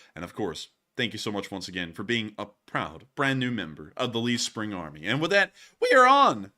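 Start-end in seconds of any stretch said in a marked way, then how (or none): 5.1-6.4 voice cracks very high and loud. Moving on to the next donation message, voice cracking. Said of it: "that was a voice crack right there".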